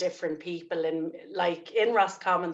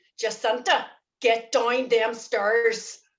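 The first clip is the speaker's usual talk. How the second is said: put-on angry, cross, pitched-up voice with Belfast accent; 5 semitones higher, 4 dB louder than usual. Asked for a Belfast accent, the speaker does their mother: imitating angry mother, Belfast accent. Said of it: "I'll do me ma when she was angry".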